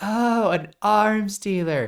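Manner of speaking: laughing while talking. Imagining Agent M making the arms dealer joke, laughing while talking. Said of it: "just laughing like".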